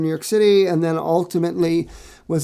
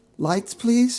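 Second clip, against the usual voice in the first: tiny, little cartoon character voice; 6 semitones higher than usual. Retelling Linus stepping out to give his Christmas speech: Linus's little voice. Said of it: "in that little voice".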